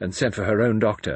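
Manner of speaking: ordinary delivery, nothing marked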